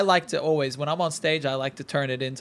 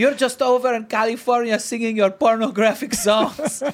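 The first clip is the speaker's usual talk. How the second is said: thick put-on Polish accent, pitched up; 8 semitones higher, 4 dB louder than usual. Repeating his mom's remark, as asked by the host: polish accent. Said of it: "Can you say that again, but in the Polish accent?".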